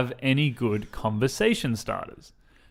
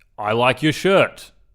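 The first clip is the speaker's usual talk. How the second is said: very aggressive delivery, louder; 5 dB louder than usual. Demonstrating skipping small talk and opening with a compliment, very aggressive. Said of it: "Very aggressively".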